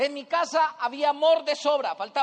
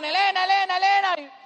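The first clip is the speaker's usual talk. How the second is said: high, teasing taunt, repeated; 6 semitones higher, 4 dB louder than usual. Retelling how the brothers teased him as a child: imitating brothers' mocking taunt.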